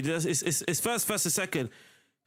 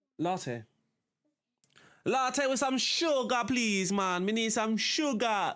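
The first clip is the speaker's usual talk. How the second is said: put-on Jamaican accent, pitched up; 6 semitones higher than usual. Answering which one, in a stereotypical Jamaican accent. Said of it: "that was the most typical Jamaican accent".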